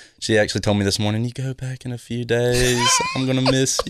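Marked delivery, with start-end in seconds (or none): 1.3-3.9 put-on voice, pitched up and sing-song. Quoting what his mom told him this morning, imitating his mom. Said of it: "You sound just like your mom".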